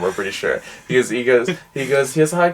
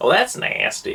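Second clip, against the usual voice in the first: animated cartoon character voice; 9 semitones higher than usual. Showing the one line of an old impression: Cleveland from Family Guy voice. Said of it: "I can do Cleveland from Family Guy".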